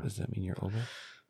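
hushed whisper. Two hosts tease each other about who is older, whispering. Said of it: "Why are we whispering?".

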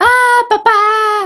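very high anime-style screamed cry. Comparing anime characters' screams, imitating Shinji's scream. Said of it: "el de Shinji es como".

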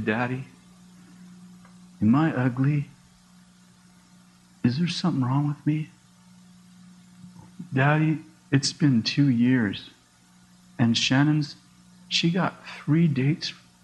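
put-on slow, tearful, crying, pleading girl's voice. A father retells his daughter's question before a group date, imitating a daughter crying. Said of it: "she'd say she'd be crying".

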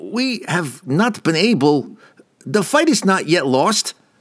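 high, halting, uneasy stammer. Narrator voices Rassiter answering the guildmaster about his guild: Rassiter stammering. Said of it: ""My guild fights mighty enemies this night," [name] stammered".

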